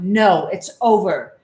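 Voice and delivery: very loud, firm, stern final word. Retelling refusing the child a slushy in the car; retelling a stern no. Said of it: "I sternly".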